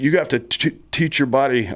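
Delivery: high-pitched hollering yell. Retelling what the company first sergeant yelled at the trainees: imitating someone yelling. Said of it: "he's yelling at us".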